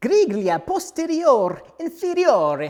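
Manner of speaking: loud, high-pitched put-on Italian accent. Reading Ferrari's name for a rear bumper piece in a put-on Italian accent. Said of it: "That's my best Italian accent".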